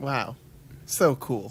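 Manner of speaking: whispered, breathy, sarcastic tone. Reacting to another speaker's account of a nice day: sarcastic tone. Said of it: "I heard that bit of sarcasm in your voice".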